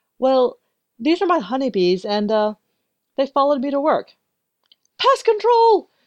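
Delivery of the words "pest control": very high, shrill, loud shriek. A woman at work sees the bees the narrator brought in: screaming. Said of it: "She screamed".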